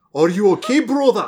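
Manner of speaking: loud, high, put-on cartoon Scottish accent. Retelling a cartoon scene in a Groundskeeper Willie accent. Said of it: "a Groundskeeper Willie accent for him".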